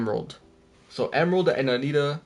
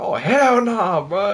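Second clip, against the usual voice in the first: very slow, loud, high, stretched-out, drawn-out yell; 7 semitones higher, 6 dB louder than usual. Retelling a moment at a campsite: retelling a yell. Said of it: "And I yelled that".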